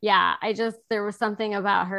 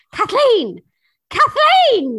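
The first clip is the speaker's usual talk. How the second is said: put-on loud, thick Irish accent with swinging tune; 13 semitones higher, 11 dB louder than usual. Speaker retells a woman saying her baby's name: heavy Irish accent. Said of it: "in her heavy Irish accent Kathleen".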